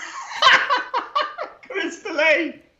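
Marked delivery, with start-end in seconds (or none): 1.6-2.5 high, slow laughing through the word. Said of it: "Why, why are you laughing?".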